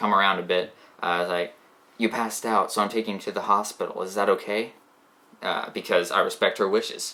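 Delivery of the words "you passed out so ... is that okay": acted-out whisper. Retelling a dream, asking a girlfriend about the hospital: retelling a whisper. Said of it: "I whisper to my girlfriend".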